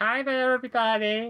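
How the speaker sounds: high, squeaky, mousy little voice. Describing how a game character turns out to talk, squeaky Beefcake voice. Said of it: "To Squeaky Cheeks".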